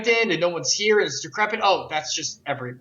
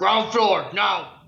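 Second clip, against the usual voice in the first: brutish put-on voice; 2 semitones higher than usual. Taking turns voicing lift announcements, doing this one in a Hulk voice. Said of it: "And mine is like Hulk".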